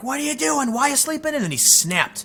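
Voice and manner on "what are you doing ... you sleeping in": shrill, very high, scolding yell. Retelling a friend's mom waking him for work: imitating a mom yelling. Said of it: "she's yelling".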